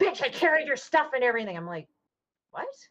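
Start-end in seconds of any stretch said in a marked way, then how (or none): 0.0-1.6 mock, shrieked, high, all-out screaming outburst. Retelling how she started screaming at the speaker over the phone: imitating her screaming. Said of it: "she just started screaming like".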